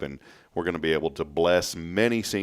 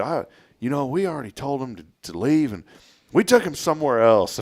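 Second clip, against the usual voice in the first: disguised voice, changed, high and raised; 8 semitones higher, 5 dB louder than usual. Retelling a prank phone call made in a disguised voice: imitating his own disguised voice. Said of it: "I changed my voice, pretended I was somebody else".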